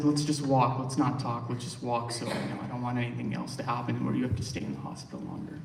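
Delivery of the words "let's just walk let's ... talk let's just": plain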